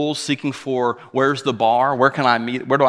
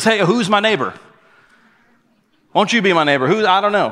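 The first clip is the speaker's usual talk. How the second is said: put-on panicky, pitched-up, high kids' TV host voice; 7 semitones higher, 4 dB louder than usual. Retelling a man asking in a panic who his neighbor is: Mister Rogers impression. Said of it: "he goes full Mister Rogers and says".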